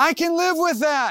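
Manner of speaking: high-pitched, hollered delivery. Retelling yelling back at mom as a kid: imitating own childhood yell. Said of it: "I would yell back".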